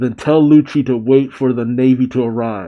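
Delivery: ordinary talk, nothing marked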